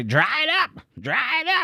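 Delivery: put-on very high, very slow, sing-song old woman voice. Quoting what she always used to say: old lady voice. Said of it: "Just like old lady voice".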